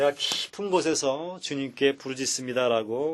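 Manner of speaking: usual speaking voice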